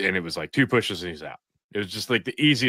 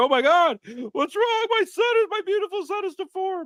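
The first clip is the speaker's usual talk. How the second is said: mock panic, very high and frantic outburst. Retelling first seeing a newborn's misshapen head: retelling own panicked reaction. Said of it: "I was like".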